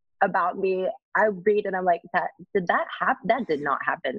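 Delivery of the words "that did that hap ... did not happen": usual speaking voice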